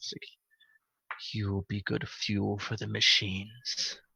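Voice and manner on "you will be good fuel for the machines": evil, low, menacing devil half-whisper. Narrating a game, voicing the devil looking down at the player: half-whisper. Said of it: "his voice comes out in a whisper".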